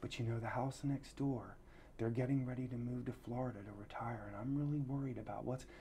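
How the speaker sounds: very quiet hushed aside. Retelling what a woman told the speaker, imitating her lowered voice. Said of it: "she lowers her voice and says".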